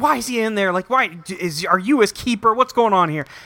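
high, confrontational yelling. Telling a story about two men in a lobby, retelling a man yelling. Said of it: "Six starts yelling".

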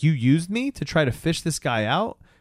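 put-on high, angry, lashing-out voice. Retelling a story, the speaker voices a daughter confronting her dad: mock-angry girl. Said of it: "she's just pissed".

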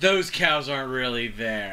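ordinary delivery

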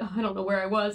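put-on flustered, frazzled voice. Retelling how someone sounded after losing their place: imitating Tyler sounding frazzled. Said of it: "he gets so frazzled".

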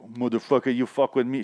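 imitated Jamaican accent. Describing a woman's character, quoting her line in a Jamaican accent. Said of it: "She has like Jamaican accent".

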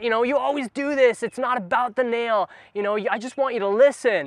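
worked-up angry voice. Retelling a video where a wife answers her husband: imitating someone getting mad. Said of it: "she gets all mad".

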